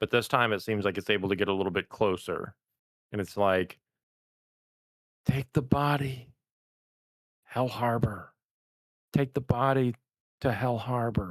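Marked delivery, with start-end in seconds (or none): 5.2-11.3 faraway, echoing voice. Narrating a voice the listeners hear again, drawing closer, in an echoey distant voice. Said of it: "like the echoey voice from a distance again".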